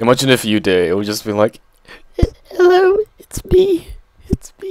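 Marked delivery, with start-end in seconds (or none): 2.5-4.7 mock timid, scared, shy voice, higher pitch. Imagining a camera-shy child trying to do a video intro: imitating a scared, camera-shy child. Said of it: "scared little child".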